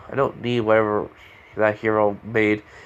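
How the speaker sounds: ordinary delivery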